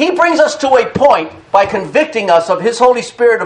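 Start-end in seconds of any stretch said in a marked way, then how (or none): none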